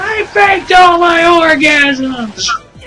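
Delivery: screaming. Acting out a ringtone going off in class, Chris Griffin screaming. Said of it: "Chris Griffin just screams".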